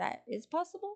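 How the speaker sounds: voice jumping very high, squeaky.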